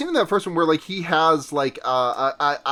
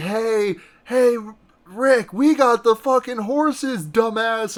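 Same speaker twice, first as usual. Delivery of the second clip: mock jeering, high taunting shout; 7 semitones higher than usual. Retelling a film scene across a river: imitating a shouted taunt. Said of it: "Benny taunt-, shouts over".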